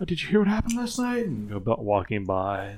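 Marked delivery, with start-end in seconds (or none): 0.0-1.2 put-on whispering little old lady voice, higher, faster. Narrating overheard conversation in town, whispering little old lady. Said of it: "some little old lady whisper".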